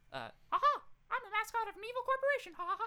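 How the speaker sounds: squeaky cartoon mouse voice. Showing off the other voices you can do, in a Mickey voice. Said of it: "So I can do Mickey".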